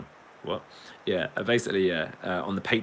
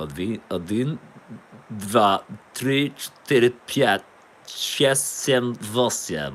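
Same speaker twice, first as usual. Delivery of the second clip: posh English accent attempting a fake Russian accent; 3 semitones higher, 5 dB louder than usual. Trying to sound russian while counting: posh english man attempting russian. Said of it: "sounding like a really posh English man saying Russian".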